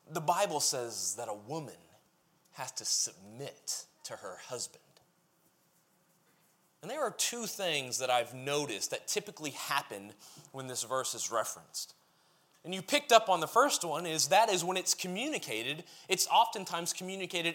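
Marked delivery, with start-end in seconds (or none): 0.1-4.8 low, soft, condescending tone. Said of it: "in a very condescending way".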